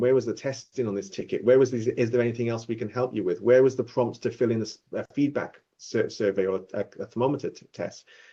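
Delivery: ordinary delivery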